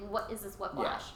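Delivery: ordinary talk, nothing marked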